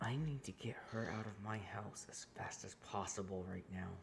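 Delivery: very quiet, low, hushed whisper. A character gets down and whispers to you, whispering. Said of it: "He kind of gets down and whispers to you".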